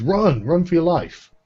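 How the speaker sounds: frantic, panicked cry. Game narrator voicing a guard who notices the players, screaming. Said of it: "and just screams".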